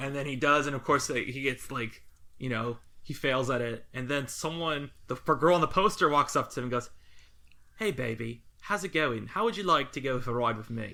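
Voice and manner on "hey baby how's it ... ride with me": put-on flirty, come-on British accent. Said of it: "She sounds like Austin Powers".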